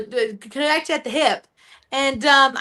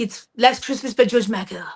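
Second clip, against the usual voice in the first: put-on French accent, lower; 3 semitones lower than usual. Retelling what a French best friend said about Christmas songs: imitating Pierre's French accent. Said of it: "he gets so mad when I do this accent".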